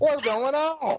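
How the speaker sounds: put-on high, slow drawn-out voice.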